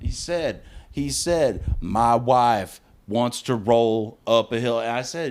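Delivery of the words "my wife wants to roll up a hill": mechanical, flat robotic monotone. Retelling what the husband kept saying: imitating a robot tone. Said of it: "saying that in that robot tone".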